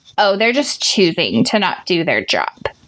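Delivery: low, sassy put-on voice full of attitude. Speaking to coworkers, acting out what a peer might think, sassy voice. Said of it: "That was my best sassy voice".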